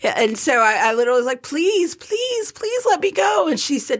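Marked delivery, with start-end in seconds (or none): 1.4-3.5 put-on very high childlike pleading, like a five-year-old. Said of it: "I'm like a five-year-old begging".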